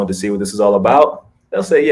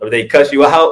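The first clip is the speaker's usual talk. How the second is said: plain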